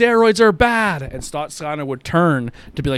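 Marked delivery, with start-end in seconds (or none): 0.0-1.0 very high, shrill, very loud heckling yell. Telling a story about someone yelling at a wrestler in the ring: retelling a heckler yelling. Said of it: "and he yells".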